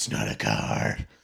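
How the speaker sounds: put-on hoarse, raspy voice. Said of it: "he sounded like he had throat cancer".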